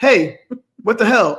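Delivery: bossy, demanding, commanding tone. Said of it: "a demanding dictatorship tone".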